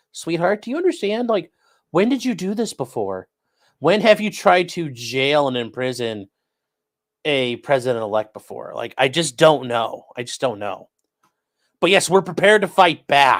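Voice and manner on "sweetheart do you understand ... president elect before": usual speaking voice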